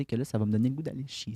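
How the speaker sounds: hushed whisper. Speaker tells a friend about words she rarely uses, whispering. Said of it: "j'avoue que je chuchote".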